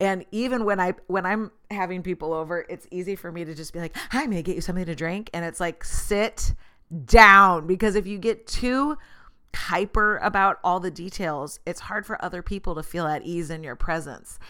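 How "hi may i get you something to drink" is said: mock anxious voice, faster. Speaker acts out greeting guests at home, acting out anxious hostess. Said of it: "crippling hostess anxiety".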